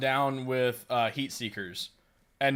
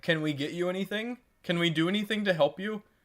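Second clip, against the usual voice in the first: put-on sweet-sounding male voice, higher; 5 semitones higher than usual. Retelling what a guy kept asking a girl: imitating a sweet-sounding guy. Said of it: "the guy was so sweet".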